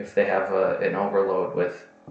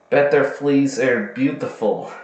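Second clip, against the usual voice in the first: bad, loud, high Scottish accent drifting into Russian; 5 semitones higher, 6 dB louder than usual. Reading another example aloud: bad Scottish accent sounding Russian. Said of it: "sounds more Russian".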